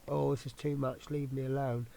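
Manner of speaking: plain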